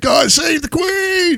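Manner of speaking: acted piercing shrill yell, pitched very high. Recounting what he shouted as they were leaving, retelling someone shouting. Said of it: "this fucker started shouting".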